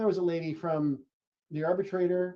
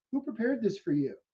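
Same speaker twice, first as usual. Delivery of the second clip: put-on playfully suspicious tone, pitched up; 6 semitones higher than usual. Retelling how a man pulled them aside afterward, imitating his playful suspicion. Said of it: "playfully, suspiciously".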